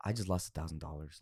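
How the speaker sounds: mock very low, very soft, heartbroken disappointment. Acting out how a man reacted, like a parent would, retelling a disappointed tone. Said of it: "your fucking parent would tell you, like they're not mad, they're just disappointed".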